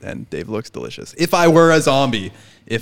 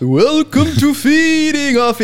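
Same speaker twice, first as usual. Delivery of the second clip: very high-pitched vampire voice; 4 dB louder than usual. Welcoming listeners to the show, taking turns with others, Dracula voice. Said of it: "now I'm doing the Dracula".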